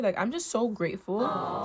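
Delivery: slow, tearful voice speaking through crying. Reflecting on five years of building a business, crying while talking. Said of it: "I think I'm just crying".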